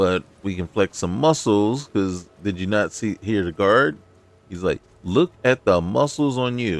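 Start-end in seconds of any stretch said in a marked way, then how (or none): 5.0-6.8 put-on condescending voice, higher. Retelling what a guard said about their muscles: imitating a condescending guard. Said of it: "he sounded a little condescending".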